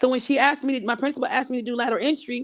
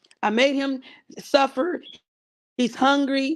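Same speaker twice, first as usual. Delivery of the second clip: plain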